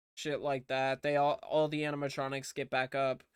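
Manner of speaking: ordinary talk, nothing marked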